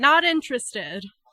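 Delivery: very loud, high yell. Voicing someone inside a house answering a knock: yelling from inside. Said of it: "You hear a yell from inside".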